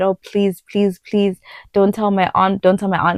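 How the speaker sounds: put-on desperate begging plea. Retelling begging a teacher not to tell an aunt: imitating own past begging. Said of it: "I begged her so much".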